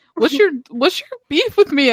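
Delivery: acted confrontational tone. Retelling how he came back on and challenged the speaker, imitating a confrontational guy. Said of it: "he was hella confrontational".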